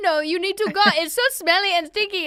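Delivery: poor put-on French accent. Retelling being told to leave a Paris restaurant: bad French accent. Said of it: "That's not a great accent".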